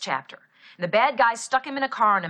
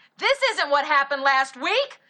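called-out shout with raised pitch; 6 semitones higher than usual. Retelling standing up while the other kids cheered: imitating own past shout. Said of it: "I stood right up and started shouting".

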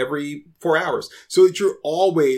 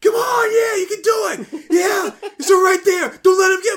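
mock, very high-pitched, excited shouted cheering yell; 3 dB louder than usual. Mocking curling players, the speaker acts out their cheering, retelling players' yelled encouragement. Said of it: "hear them yell, like, encouragement to each other".

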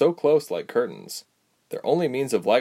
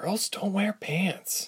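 sharp whisper pitched very high; 9 semitones higher, 6 dB quieter than usual. Narrating a story, reading a girl's reply to her friend: sharp whisper. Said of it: "Ilse whispered sharply".

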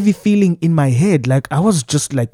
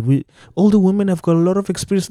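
normal talking voice

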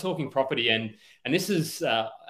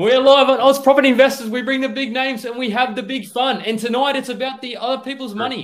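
very loud, very high, live-wire hyped-up voice; 11 semitones higher, 9 dB louder than usual. Host opening a live property investing podcast, with high energy. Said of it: "fired off by like a bit of a live wire there".

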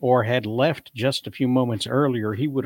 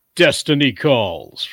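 loud, grand, heroic cartoon superhero proclaiming voice; 6 dB louder than usual. Asked to say something about destiny, a performer answers in a too-deep Tick voice. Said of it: "that's a little too deep".

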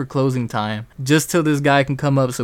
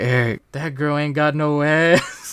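mock drunken speech. Retelling what a drunk friend said about a girl: imitating drunk Emilio. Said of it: "he's so fucking drunk".

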